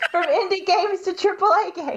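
high, laughing giggle fit through words.

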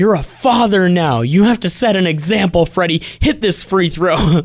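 play-acted, loud, high hollering yell. Recounting yelling at the TV at Freddie during a free throw, retelling own yelling at the TV. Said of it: "I keep yelling at the TV".

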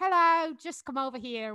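slow, polite, put-on New Zealand accent. Speaker retells New Zealand security staff calling them over, imitating New Zealand accent. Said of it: "whatever their accent is".

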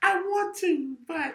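very high-pitched put-on lady voice. Acting out a woman making excuses at the end of a night, in a put-on lady voice. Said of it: "like my lady voice".

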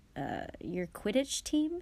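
ordinary delivery

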